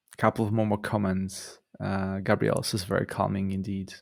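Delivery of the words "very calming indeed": ordinary delivery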